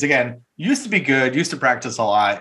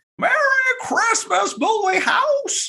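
very high, slow, drawn-out delivery. Shouting goodbye while leaving the office: Jimmy Stewart voice. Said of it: "Trying to do my Jimmy Stewart".

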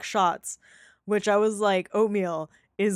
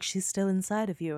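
put-on eerie, unsettling child voice; 6 dB quieter than usual. Retelling what a child in the show says: imitating a creepy child. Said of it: "real creepy".

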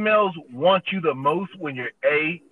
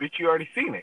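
muttered aside, under the breath. Retelling a remark to a date: retelling a muttered aside. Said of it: "And I said under my breath".

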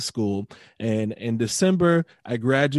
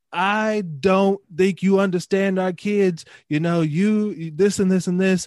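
put-on scream, higher; 6 semitones higher than usual. Retelling what a principal said to the dean: imitating someone screaming. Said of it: "I hear him screaming at the current dean".

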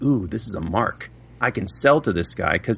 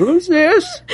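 put-on very high, slow, raised, drawn-out old-person voice; 6 dB louder than usual. Answering a telemarketer's call by playing an old person, slow old-person voice. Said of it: "I just play really slow".

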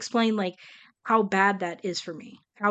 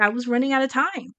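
ordinary delivery

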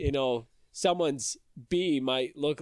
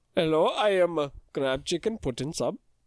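put-on mock Indian accent; 2 semitones higher than usual. After warning they'll be racist again, doing an offensive mock Indian accent. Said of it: "Offensive accent".

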